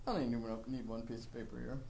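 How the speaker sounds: put-on smug tone. At a retreat, the speaker acts out what they once said: retelling smug past self. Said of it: "smugly said".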